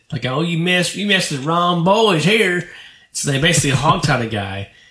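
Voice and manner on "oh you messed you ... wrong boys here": put-on laid-on hillbilly accent, high. Retelling what two guys said, in a very hillbilly country accent. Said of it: "very hillbillishly country accent".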